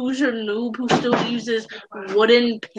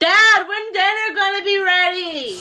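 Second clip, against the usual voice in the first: high-pitched hollered yell, shouted out; 8 semitones higher, 3 dB louder than usual. Calling out to Dad about dinner: yelling. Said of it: "no yelling in podcast".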